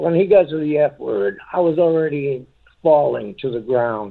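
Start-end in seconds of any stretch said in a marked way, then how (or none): none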